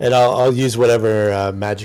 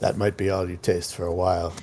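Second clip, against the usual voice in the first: whispered character voice, lower and quieter; 2 semitones lower, 6 dB quieter than usual. Voicing game characters after the little soul cries: Snorri whispering. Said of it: "Snorri just kind of whispers".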